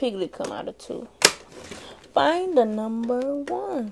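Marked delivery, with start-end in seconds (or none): 2.1-3.9 muffled voice, as if mouth full of honey. Showing how Winnie the Pooh talks, in a Winnie the Pooh voice. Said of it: "That's Winnie the Pooh".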